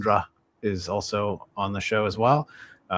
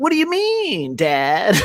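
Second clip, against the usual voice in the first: put-on very high, swooping little-kid voice; 13 semitones higher, 6 dB louder than usual. Voice actor showing how he performed the child characters: child character voice. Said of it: "doing all of the the female and child characters".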